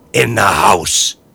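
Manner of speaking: loud, hissing, forceful hissed delivery. A father calls to his daughter across the field, hissed. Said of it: "her father hissed".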